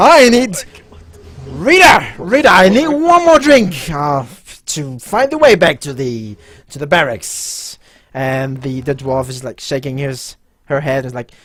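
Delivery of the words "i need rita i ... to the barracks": put-on drunk voice, much higher and louder. A quite drunk lieutenant from another table calls to Rita, as a drunk guard lieutenant. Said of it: "you notice that the lieutenant or whatever he is from the other table, that seems to be quite drunk, / you notice that the lieutenant or whatever he is from the other table, that seems to be quite dru".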